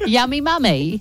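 attempted English accent. Friends repeating a phrase, trying to say it in an English accent. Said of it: "I was trying to do it in English accent".

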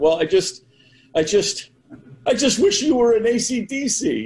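put-on high-pitched, tearful little-kid voice.

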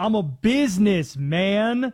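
slow, loud, heavy stress on BUSINESSMAN. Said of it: "It's actually a [name] lyric".

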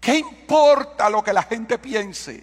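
high, slow, weeping, tearful voice. Speaker quotes Juliana's reply after telling her to stop crying, imitating crying. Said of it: "deja de llorar".

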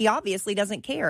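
plain

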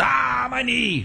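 very high, rough, rasping, creaky, squeezed cry of pain. Retelling a fight moment, imitating Conor McGregor. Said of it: "Conor McGregor was".

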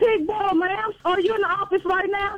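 shrill, heated, put-on yelling. Arguing with a woman over a $100 charge for a dog, yelling. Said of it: "Don't yell at me".

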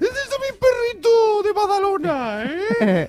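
put-on high baby voice. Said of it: "¿Ese es el tono?".

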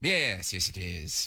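low, hushed, deep and quiet gothic voice. Answering a phone call asking for Greg, in a very Bram Stoker voice. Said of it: "that sounded very Bram Stoker".

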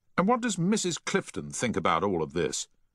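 plain

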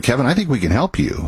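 normal talking voice

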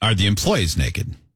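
ordinary talk, nothing marked

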